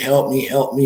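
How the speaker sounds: put-on panicked screaming cry, held in. Retelling a scene where someone slides in: imitating someone screaming.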